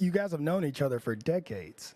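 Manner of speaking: heavy emphasis on "decades". Addressing two service members, demonstrating emphasis: emphasis on decades. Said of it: "See how I'm putting emphasis on the decades here".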